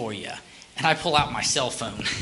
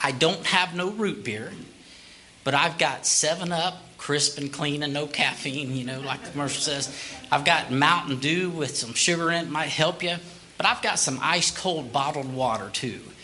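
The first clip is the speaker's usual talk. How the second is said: ordinary delivery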